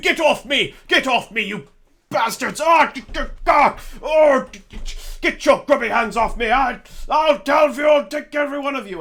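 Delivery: angry, very high, booming, strained, stammering shouts. Voicing a captive shouting at goblins inside a cave: angry shouting captive. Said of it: "there's lots of, like, shouting".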